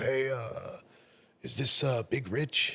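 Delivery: rasping, drawn-out voice, very slow. Retelling a phone call the next day from a bar manager; raspy voice. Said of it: "raspy voice on the phone".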